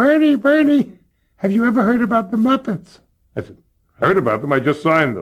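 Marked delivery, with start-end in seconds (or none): 0.0-3.0 very high-pitched voice. Retelling a phone call from one of the bosses, in Harry Kalshine's very high-pitched voice. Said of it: "he had a very high-pitched voice".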